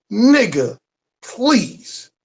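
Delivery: emphatic delivery, both words hit with full emphasis.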